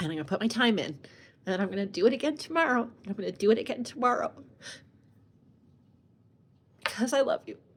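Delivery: tearful, weeping voice. Speaking to someone they love, promising to keep going, while crying. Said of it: "I swear I'm going to stop crying".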